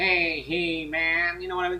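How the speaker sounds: high nasal voice, octave up. Showing how to put the voice up an octave: Skeletor voice, octave higher. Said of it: "just do it one octave higher".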